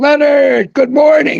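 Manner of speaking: put-on very high, full-throated top-of-lungs yell. Retelling how Brad Bowling came into a bowling alley greeting Leonard, retelling a top-of-lungs shout. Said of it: "top of his lungs".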